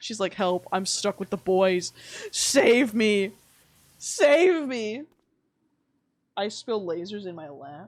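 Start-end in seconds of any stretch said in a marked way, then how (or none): 0.3-5.0 loud, drawn-out, helpless pleading tone. Imitating someone who makes it sound like she is lost: imitating someone acting lost. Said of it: "She makes it sound like she's, like, you know, getting lost".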